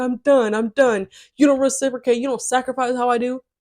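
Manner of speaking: acted-out, heated ranting yell, mild and held in. Quoting how a man screamed at the speaker, imitating a man screaming. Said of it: "at the top of his lungs".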